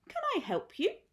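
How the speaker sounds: tiny, small, clear, very high little voice. Reading a story aloud, the narrator voices the bear speaking to a woman, small clear voice. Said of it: "it said in a small, clear voice".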